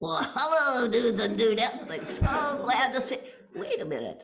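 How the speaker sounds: hand puppet character voice. Performer voicing a hand puppet greeting the audience, hand puppet character voice. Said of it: "Then I will give you my voice and you can talk".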